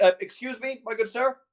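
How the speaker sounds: loud, high calling out. Voicing a character who finds a sleeping player in a tree: calling out. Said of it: "and he just calls out".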